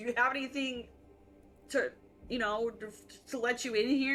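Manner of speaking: plain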